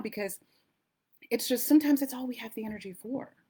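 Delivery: moved, emotional, voice catching and choking up. Speaker giving advice about taking the next right action, getting emotional. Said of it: "I'm getting emotional thinking about it now".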